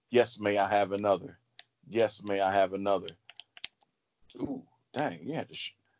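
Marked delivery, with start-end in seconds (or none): none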